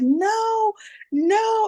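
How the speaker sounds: put-on very high, screaming toddler wail. Speaker retells a child refusing to sleep before the podcast, imitating him screaming. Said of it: "He was literally screaming like".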